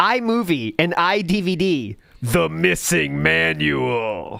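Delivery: theatrical, dramatic reading, drawn out. Reading out book titles from a list for laughs, in a dramatic voice. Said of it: "I'll read it in a dramatic voice".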